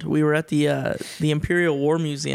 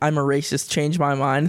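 ordinary talk, nothing marked

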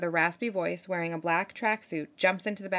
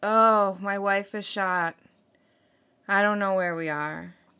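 mock oddly composed tone with no panic; 4 dB louder than usual. Retelling a 911 caller reporting his wife shot: imitating a caller not freaking out. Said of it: "he's not really freaking out".

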